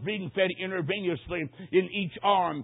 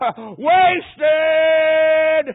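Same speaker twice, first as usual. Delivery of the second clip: loud, high-pitched screaming. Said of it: "he just screamed out".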